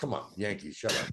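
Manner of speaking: put-on heavy New York accent, half-whispered. Retelling a girl's reply to his baseball team question, in a strong new york accent. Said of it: "the strongest New York accent from a girl".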